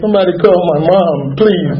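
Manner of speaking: acted-out pleading, begging voice. Retelling waiting for the hospital, the speaker reenacts asking for his mom: acting out begging. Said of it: "Begging them".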